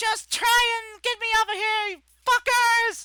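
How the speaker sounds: put-on very loud, very high child's yell. Voicing a child who shouts defiantly at the people below: child's voice shouting. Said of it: "this child's voice is shouting out".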